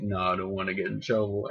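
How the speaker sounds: ordinary delivery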